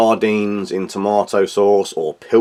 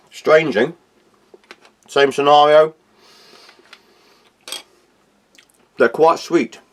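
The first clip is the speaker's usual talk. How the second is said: talking while chewing, mouth full, much higher pitch; 6 semitones higher than usual. Tasting dishes during a food review, talking with mouth full. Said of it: "talking my mouth full".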